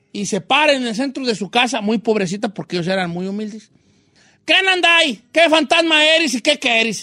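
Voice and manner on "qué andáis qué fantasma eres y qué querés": mock demanding, loud, high, challenging shout. Retelling how a poor woman challenged a ghost in her house, imitating her shout. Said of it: "Así le gritaba con esa voz al fantasma".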